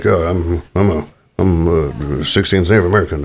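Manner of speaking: slow, badly done movie-star drawl. Joking how an actor would claim heritage: bad Johnny Depp impression. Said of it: "That was a bad impression".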